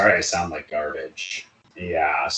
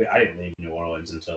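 ordinary talk, nothing marked

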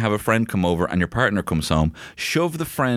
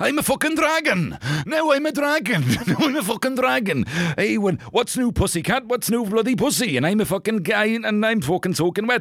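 very high put-on Welsh accent; 12 semitones higher than usual. Touring regional accents and arriving in Wales, in a put-on Welsh accent. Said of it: "now we're in Wales".

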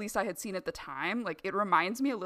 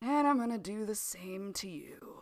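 mock weary, exasperated, droning delivery. Describing a movie killer confessing in a car: mock-exasperated factory drone. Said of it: "says in this exasperated way, like he's a factory drone".

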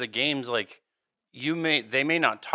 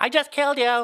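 put-on squeaky, very high-pitched little-kid voice; 12 semitones higher, 4 dB louder than usual. Describing a kid heard in GTA after being killed, imitating a high-pitched kid. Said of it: "it's like this really high pitch".

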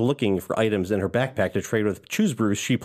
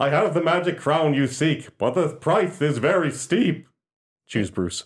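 playful, high-pitched made-up character voice; 5 semitones higher than usual. Asked for an impression of a character, doing a character impression voice. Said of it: "What about you?".

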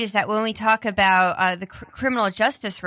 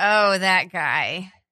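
mock despair with a despairing groan; 2 semitones lower than usual. Teasing the other speaker about a name mention, imitating their reaction with mock despair. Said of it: "I heard the despair in your voice".

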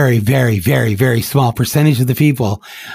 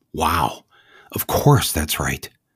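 ordinary talk, nothing marked

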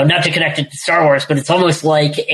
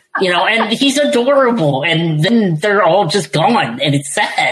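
plain

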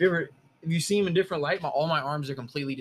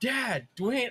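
high-pitched hollered yell; 8 semitones higher than usual. Retelling how a friend called out after the accident: imitating a friend yelling. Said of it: "he fucking yells".

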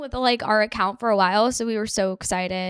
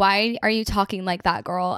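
ordinary talk, nothing marked

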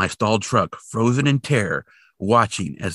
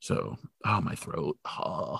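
ordinary talk, nothing marked

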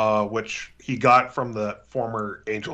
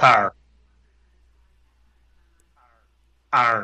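Pittsburgh pronunciation, louder; 6 dB louder than usual. Saying words on request to show a Pittsburgh accent. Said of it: "Say it right now".

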